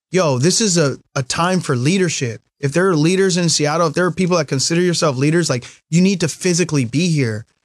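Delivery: ordinary delivery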